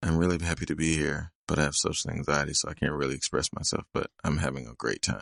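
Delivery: mock super monotone, level, unvarying flat drone. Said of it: "Like it was super monotone and flat".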